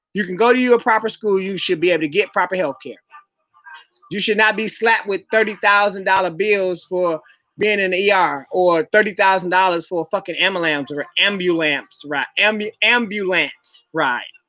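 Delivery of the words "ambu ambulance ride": slow, deliberate, careful syllable-by-syllable enunciation. Speaker says a word slowly because people mock how they say it, saying the word slowly. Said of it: "I have to say that slow".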